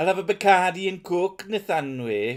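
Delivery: bad, fake, put-on Welsh accent, high and loud. Asked to do an accent on the spot, in a Little Britain Welsh accent. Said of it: "I'm doing his version of the Welsh accent".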